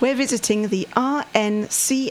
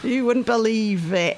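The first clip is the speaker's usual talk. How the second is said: put-on Mancunian Manchester accent. Asked to repeat a line in a Manchester accent, not Cockney, Manchester accent. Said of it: "Can I have that in a Manchester accent".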